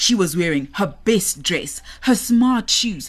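plain reading voice

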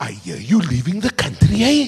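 put-on loud, swooping Cape Flats woman's accent and lilt. Retelling what a woman cleaning the floor said as he walked past, Cape Flats cadence. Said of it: "with the cadence of a Cape Flats woman".

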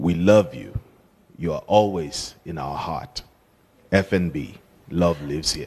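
low, commanding voice.

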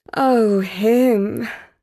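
sighed words. A narrator reads a woman answering her companion, sighing. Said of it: "sighed Portia".

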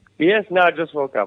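normal talking voice

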